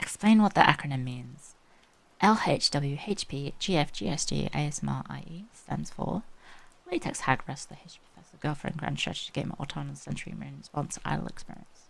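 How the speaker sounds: quiet soft-spoken voice. Streamer answering a viewer's redeem, talking softly. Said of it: "I'm going to be talking softly".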